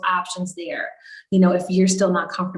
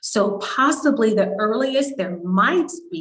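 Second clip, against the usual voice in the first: "might" stressed within a slow phrase. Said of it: "emphasis on might".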